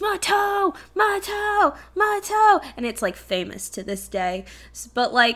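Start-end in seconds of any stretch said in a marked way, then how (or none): 0.0-2.6 acted-out very high, shrill screaming. Recalling a famous winning-goal call, retelling an announcer's scream. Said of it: "he screams".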